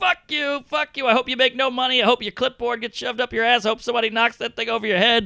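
furious, high-pitched, lost-it cursing rant. Retelling losing it on a guy before the train came: retelling own angry outburst. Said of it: "I kinda lost it on the guy".

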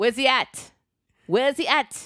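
put-on loosely Jamaican accent. Retelling a FaceTime call from a woman asking for someone, imitating her accent. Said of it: "that's not a Jamaican accent".

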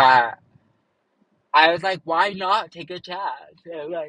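words mouthed around a yawn. Telling a personal story, the speaker yawns while talking. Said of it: "sorry, I'm yawning".

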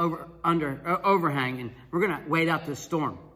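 ordinary talk

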